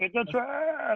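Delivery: very high, odd, weird squeaky voice. Quoting a Star Wars clip line, doing a Jamel impression. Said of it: "Shout out Jamel and your weird voice".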